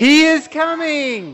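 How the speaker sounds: loud, very high-pitched, swooping shout. Leading children in a shout after counting to three: shouting. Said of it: "we're gonna shout".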